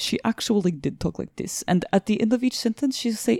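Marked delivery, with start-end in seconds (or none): 0.0-1.6 put-on Ukrainian accent on English. Describing a woman they knew from Ukraine, imitating her Ukrainian accent. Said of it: "And she talked like this".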